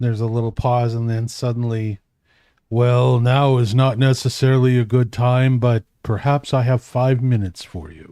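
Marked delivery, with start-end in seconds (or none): 2.7-8.1 very deep voice, slower. Retelling a visit, voicing the person who answers in a very deep voice. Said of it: "there's this very deep voice that goes".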